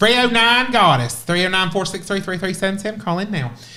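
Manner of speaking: put-on Appalachian accent. Asked by another speaker to do it in an Appalachian accent: Appalachian accent. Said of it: "in an Appalachian accent?".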